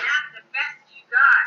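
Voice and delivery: loud, fierce, shouted yelling. Retelling telling the story to doctors and nurses: retelling her own yell. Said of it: "I yelled and slammed my hand".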